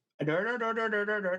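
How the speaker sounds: put-on Pakistani accent.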